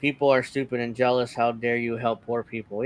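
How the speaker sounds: ordinary delivery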